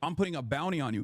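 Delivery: normal talking voice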